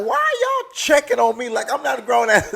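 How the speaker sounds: indignant, incredulous, disbelieving, put-out tone. Retelling a reaction to siblings checking in: retelling indignant reply. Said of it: "I'm looking at the phone like".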